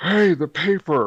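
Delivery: high-pitched shouting. Voicing Greg yelling down the hall for the paper: yelling down the hall. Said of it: "especially when he's yelling down the hall".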